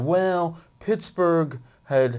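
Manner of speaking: slow, drawn-out, dopey dumb guy voice. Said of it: "this is my dumb guy voice".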